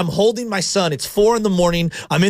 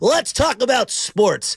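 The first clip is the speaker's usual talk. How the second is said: put-on, stock sports-radio broadcaster delivery; 4 semitones higher than usual. Speaker demonstrates an on-air put-on broadcaster voice. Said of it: "here's broadcaster voice".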